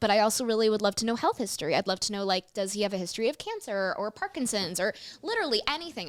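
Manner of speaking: usual speaking voice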